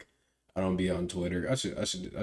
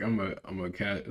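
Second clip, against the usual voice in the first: ordinary talk, nothing marked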